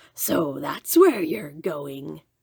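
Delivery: rough, low, gruff, growling wolf voice. Reading a fairy tale aloud, a wolf speaks to the girl heading to Grandma's: gruff, growly wolf voice. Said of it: "said a gruff, growly voice".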